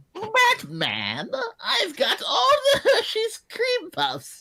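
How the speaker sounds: put-on very high, shrill, zany old-time villain voice, swooping wildly. Streamer voicing a villain speaking to Batman, in a wacky 1950s Joker voice. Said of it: "That was the 1950s Joker or something".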